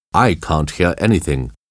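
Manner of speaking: ordinary delivery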